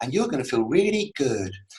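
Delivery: light airy-fairy voice. Mocking the affirmation audios given to athletes, in an airy fairy voice. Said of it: "some airy fairy voice in the background going".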